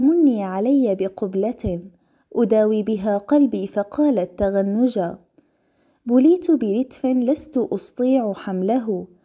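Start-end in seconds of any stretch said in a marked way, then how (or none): none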